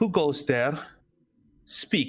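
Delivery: high woman's voice calling out. Voicing a woman who calls out as the march draws near: voicing a woman. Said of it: "You hear a woman speak. And she goes".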